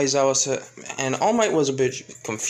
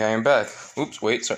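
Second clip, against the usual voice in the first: usual speaking voice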